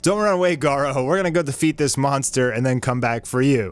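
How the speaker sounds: ordinary talk, nothing marked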